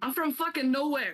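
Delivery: loud shouting. Answering the teacher in character: loud. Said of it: "Sorry, that's loud".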